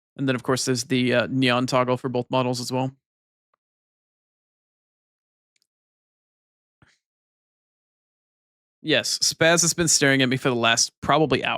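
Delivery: husky, hoarse voice. Carrying on talking, your voice gone hoarse. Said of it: "My voice is horsey. It's hoarse".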